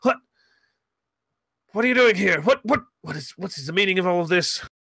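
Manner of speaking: trapped, cornered character voice. A game master voices the target as the players confront him, like a cornered animal. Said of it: "He drops back like a cornered animal".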